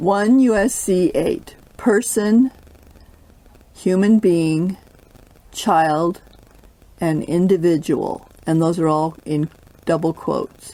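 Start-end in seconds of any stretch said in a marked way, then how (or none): 0.0-8.3 reading at a slower pace. Rereading a legal definition aloud when asked to: reading slower. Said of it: "read that slower".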